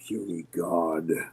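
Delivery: scornful, dismissive, contemptuous sneering dragon voice. Voicing a dragon looking down on a fallen player: contemptuous dragon voice. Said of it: "it just contemptuously goes".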